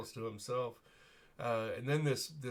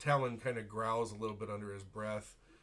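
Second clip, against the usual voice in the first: ordinary talk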